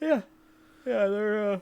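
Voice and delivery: very high-pitched words spoken through a yawn. Discussing an episode with another speaker, yawning while talking. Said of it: "sorry, I'm yawning".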